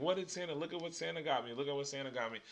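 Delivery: put-on fast, gushing, tumbling, excited child babble. Describing kids waking on christmas morning: imitating kids screaming.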